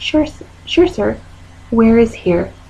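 put-on calm, even voice. Retelling answering a caller who yells to just get help here: putting on a calm voice. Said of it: "pull out my calm voice and say".

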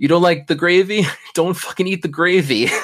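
put-on heavy, thick Italian accent, laid on. Retelling what Roxy said in the opening talk, as Roxy in a thick Italian accent. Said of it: "in a thick Italian accent".

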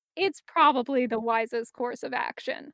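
ordinary delivery

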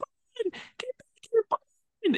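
put-on, very high, drawn-out top-of-the-lungs shriek. Speaker imitates a movie character screaming after the escaping hero; imitating a scream. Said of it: "she's screaming at the top of her lungs".

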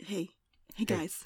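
whispered into mic. Greeting the listeners close to the microphone: whispering into the mic. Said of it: "really awkward with the whispering into the mic".

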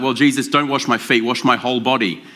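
ordinary talk, nothing marked

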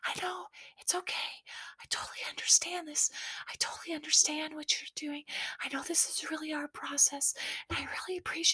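soft, breathy whisper all the way through. Retelling how a tearful contestant answered being sent home: imitating someone whispering. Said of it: "she whispers the whole thing".

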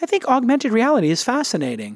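swooping high pitch. Quoting a tech company head on augmented reality: Tim Cook impression. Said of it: "he said it just like that".

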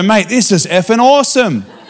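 put-on, high-pitched Australian accent. Retelling what Australians said after being prayed for, imitating an Australian accent. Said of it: "And they go".

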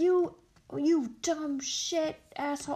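mock berating shout. Retelling a man berating a doorman, retelling a berating yell. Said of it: "just a bad berating".

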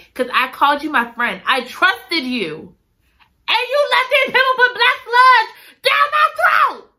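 mock very high, loud, shrill furious shouting. Voicing a character confronting a friend who betrayed her: loud, angry voice. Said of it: "I'm sorry if I'm too loud".

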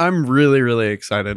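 flat, unexcited, unenthusiastic tone. Saying you are excited about an upcoming trip: not enthusiastic sounding. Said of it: "I may not sound too enthusiastic".

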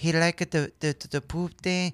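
mimicked softly spoken female voice. Retelling what an interviewed girl from the island said, imitating a soft-spoken woman. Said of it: "she's very soft-spoken. She goes".

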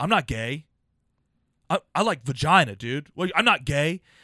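mock prickly, touchy, defensive outburst, pushing back. Retelling what a guy said after the show: imitating a defensive guy. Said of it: "one dude got so defensive".

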